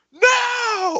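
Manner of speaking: acted, very high, long-held drawn-out outcry. Retelling a silent theater when one guy cried out: imitating a moviegoer crying out. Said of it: "it's just one guy just".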